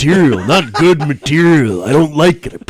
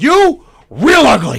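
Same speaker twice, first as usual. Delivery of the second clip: put-on gruff tough-guy voice, pitched higher; 9 semitones higher than usual. Doing a movie-line impression from They Live: Roddy Piper impression. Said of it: "I can only do Roddy Piper from They Live".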